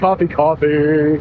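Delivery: voice dropping suddenly very low, slow.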